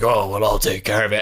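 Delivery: put-on big, gravelly voice. Retelling a Daredevil scene, quoting Kingpin: Kingpin's big gravelly voice. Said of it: "he's got this big gravelly voice".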